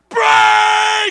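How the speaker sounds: very loud, very high, shrill, stretched-out bellow. Retelling a rugby player calling out during a rough game, retelling a shout. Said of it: "Next minute he shouts".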